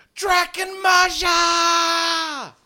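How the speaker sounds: very loud, very high, shrill woman's scream, drawn out. Voicing a villager who spots danger on the path: shrill woman's scream. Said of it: "a shrill woman scream. Uh, she yells".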